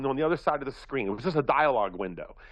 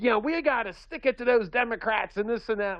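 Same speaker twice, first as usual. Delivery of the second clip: put-on feisty old-lady voice, high; 8 semitones higher than usual. Retelling a robocall fundraiser's pitch: imitating a feisty seventy-year-old woman. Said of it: "a feisty seventy-year-old old Republican wearing the straw hat going".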